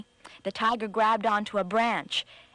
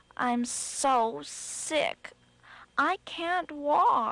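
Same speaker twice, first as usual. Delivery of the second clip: high, drawn-out moan; 5 semitones higher than usual. Reading a story aloud, the rabbit opens the door: moaning.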